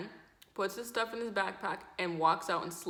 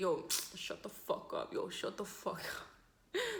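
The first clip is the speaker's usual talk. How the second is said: whispered, hushed, very slow Toronto drawl; 5 dB quieter than usual. Retelling two people arguing, the speaker imitates one man's Toronto accent. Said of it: "That's how Toronto man's talking".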